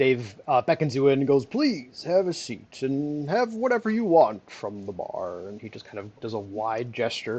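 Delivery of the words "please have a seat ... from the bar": warm, inviting fantasy tavern host character voice. Voicing a character who invites the players to sit, Deckard Cain voice. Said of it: "you sound like Deckard Cain right now".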